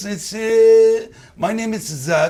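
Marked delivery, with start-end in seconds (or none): 1.4-2.3 a little Israeli accent. Showing another speaker how it sounds: slight Israeli accent. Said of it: "a little bit Israeli accent".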